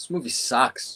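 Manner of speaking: attempted Boston accent. Challenged by another speaker to take a swing at it, trying a Boston accent. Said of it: "do you want to take a swing at it".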